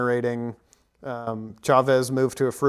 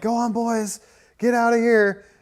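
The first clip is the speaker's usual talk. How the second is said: very high-pitched, urging shout; 10 semitones higher than usual. Retelling a movie scene where a character waves a flag: imitating a character yelling. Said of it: "but he's yelling, like".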